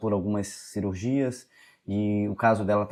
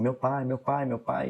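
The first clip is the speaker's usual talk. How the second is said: mock sobbing, crying voice through the words; 3 semitones higher than usual. Retelling a woman's story, the speaker acts out how she cried: imitating her crying. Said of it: "e chorando".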